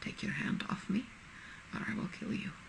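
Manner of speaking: very soft, whispered. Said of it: "Jamie remarks very softly".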